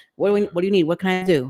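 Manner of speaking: acted frantic, panicked voice. Describing hearing your child's voice say they're in an accident, acting out panic. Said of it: "a moment of panic".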